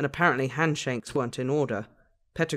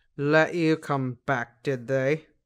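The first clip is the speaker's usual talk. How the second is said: frosty, chilly, cold, slow drawl. Narrating, Snape interrupts Remus searching for a familiar face, in a cold voice. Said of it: "a cold voice interrupted his search".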